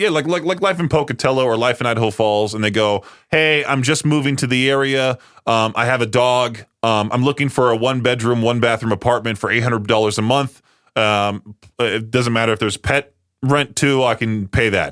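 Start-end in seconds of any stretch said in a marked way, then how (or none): none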